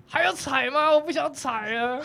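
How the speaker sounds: acted, very slow, high, drawn-out, exhausted despairing wail. Retelling an exhausting ride where a hungry, tired companion broke down: acting out his shouting. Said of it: "我就听到他在大喊".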